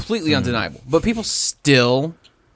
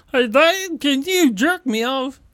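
put-on puppet voice, pitched much higher; 12 semitones higher than usual. Voicing what a son might ask his dad, the speaker uses an Ernie-like Muppet voice. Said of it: "Was that, like, Ernie from Sesame Street?".

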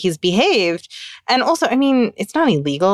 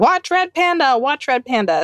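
put-on, insistent toddler screaming; 4 semitones higher than usual. Retelling what a daughter keeps screaming in the background: imitating a screaming child. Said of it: "she is screaming".

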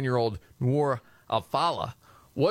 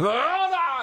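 put-on, very high, shrill holler, stretched and drawn out; 14 semitones higher than usual. Joking about how an actor would react to news, yelling. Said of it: "if it was Pacino, he'd have to yell".

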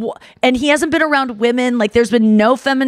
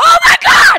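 very high, shrill, shrieking excited scream; 7 dB louder than usual. Retelling how Chris reacted on hearing the name: imitating someone screaming. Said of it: "he screams".

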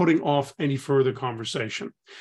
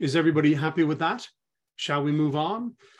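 questioning tone, pitch rising at sentence end. Demonstrating questions to ask in a meeting, rising questioning tone. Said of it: "Those tones encourage people to engage".

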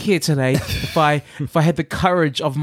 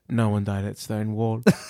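mock dry, low, hushed deadpan, no fuss; 6 semitones lower, 7 dB quieter than usual. Retelling how someone cut in without missing a beat: retelling a deadpan reply. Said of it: "with her deadpan oh, face".

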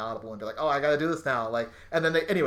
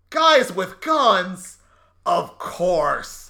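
put-on loud upset voice, much slower pace; 6 semitones higher, 8 dB louder than usual. Speaker reviewing a bad line reading, imitating Jeffrey Donovan yelling upset. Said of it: "really loud and like, seems very upset".

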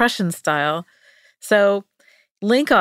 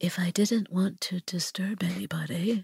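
hushed, timid, precise, very quiet little mouse voice; 10 dB quieter than usual. Imagining how a man they are discussing would have spoken, imagined meek, quiet mouse voice. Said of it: "he's just quiet and meek and like really precise".

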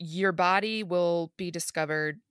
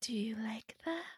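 put-on very soft, hushed, eerie, creepy little child's voice; 4 semitones higher, 9 dB quieter than usual. Voicing a computer pop-up when asked to make it scary, in a creepy child's voice. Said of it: "Do it in a child's voice so it's scary".

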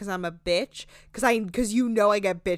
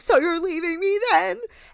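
shrill, very high raised voice, cracking; 10 semitones higher, 5 dB louder than usual. Retelling a woman's fight with her boyfriend: imitating a cracking voice. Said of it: "New York's voice is, like, cracking".

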